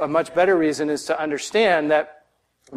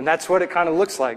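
ordinary talk, nothing marked

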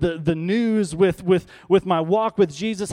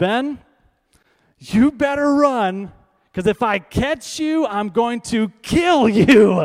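put-on hollering, very slow, every word dragged out; 4 semitones higher, 4 dB louder than usual. Retelling the father's threat to his brother: imitating dad yelling. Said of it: "my dad yells out and he says".

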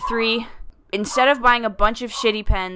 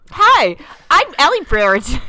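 put-on high, loud, sing-song podcast host voice; 5 semitones higher, 8 dB louder than usual. Introducing yourself at the start of a recording: put-on responsible podcaster voice. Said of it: "You sounded like a responsible-ass podcaster".

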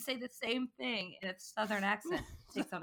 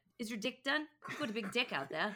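put-on New Zealand Kiwi accent; 2 semitones higher than usual. Quoting a favorite YouTube video of a guy pitching a deck, in a New Zealand accent. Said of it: "But in a Kiwi accent".

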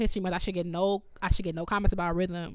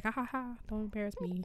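half-joking, laughing on top, serious underneath; 3 semitones higher, 10 dB quieter than usual. Retelling a teacher's warning at a master class: imitating Mister Taylor saying it jokingly. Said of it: "he said it jokingly, but he meant it".

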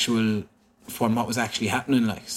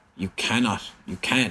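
normal talking voice

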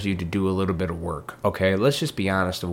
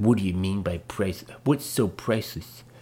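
mocking reading voice, put on; 3 dB quieter than usual. Reading aloud a mom's reply comment from a post, put-on voice reading a comment. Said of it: "I'm just using that voice".

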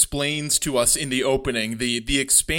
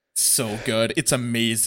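ordinary delivery

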